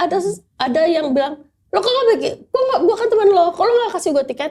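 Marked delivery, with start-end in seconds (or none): 1.7-4.5 put-on, very curt, short, sharp-tongued, snippy tone. Retelling someone demanding a free concert ticket: imitating a very curt tone. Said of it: "dengan ketus, sangat-sangat ketus".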